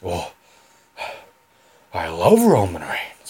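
pitch dropped low, then swooping and dragged out. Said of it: "I can't do it".

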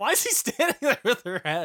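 high, loud laughing disbelief, giggling.

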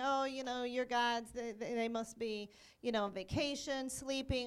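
ordinary talk

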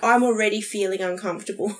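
normal talking voice

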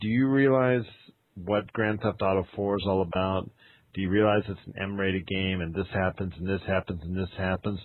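normal talking voice

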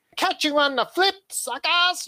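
very high, full cartoon villain voice. Wishing for a trailer sign-off, saying it in a Skeletor voice. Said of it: "do your Skeletor impression".

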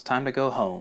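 play-acted, falsely hopeful tone. Retelling how Azula welcomes them aboard: imitating Azula's put-on hopeful tone. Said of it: "She says it in such a hopeful".

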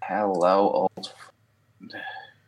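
heavy, dripping sarcasm, laid on thick. Greeting an old friend after a long time, with heavy sarcasm. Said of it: "Said with heavy sarcasm in the voice".

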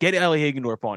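plain

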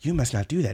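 put-on soft-spoken voice. Imitating a character from the Rurouni Kenshin dub: soft-spoken Kenshin voice. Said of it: "I just remember that dude constantly being like".

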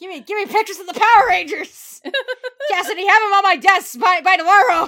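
put-on very loud, booming, thick New Zealand accent. Speaker riffing on a boss character from the show: New Zealand J. Jonah Jameson. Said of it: "Just full New Zealand J".

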